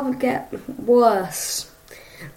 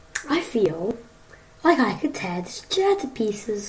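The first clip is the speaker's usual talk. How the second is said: quietly dark, sinister, menacing tone; 2 semitones lower, 8 dB quieter than usual. Answering how suffering relegation feels, in a sinister tone. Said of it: "That sounded really quite sinister".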